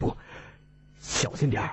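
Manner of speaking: hushed, low, cautious whisper. Holding back a companion about to rush ahead, he warns in a quiet hushed voice. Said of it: "低声道".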